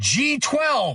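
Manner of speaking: mock piercing, very high, shrill shriek. Telling a joke about a man who ran up in their face, retelling a scream. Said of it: "and just screams".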